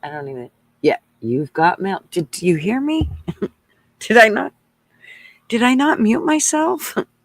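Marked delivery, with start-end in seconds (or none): 1.2-2.0 put-on automated alert voice. Telling her son he has mail, AOL 'You've got mail' voice. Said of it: "A- AOL voice".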